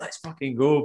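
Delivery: full-energy, hyped-up, pumped delivery. Describing how they usually come across on the podcast: imitating own usual hyped delivery. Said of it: "whereas I usually come across like".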